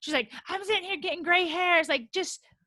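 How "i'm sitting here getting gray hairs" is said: acted out, pitched-up, ranting, complaining tone. Retelling how a cast member went off at someone: imitating Gigi going off. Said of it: "she did kind of go off".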